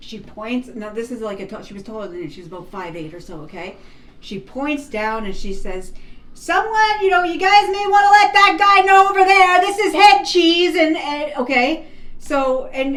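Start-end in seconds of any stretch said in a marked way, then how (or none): 6.3-10.8 very high, very loud yell. Retelling what a lady said in a store: imitating her loudest shout. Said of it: "as loud as she fucking can".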